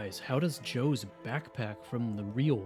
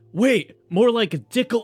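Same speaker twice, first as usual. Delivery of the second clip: shouting; 11 semitones higher, 14 dB louder than usual. Voicing a character yelling an insult down the hallway: yelling down a hallway. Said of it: "Krongus yells down the hallway".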